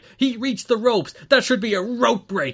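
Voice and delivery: put-on angry, indignant, loud and high-pitched. Retelling a commentator's reaction to a rope break: imitating Mike Tenay real mad. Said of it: "He was real mad".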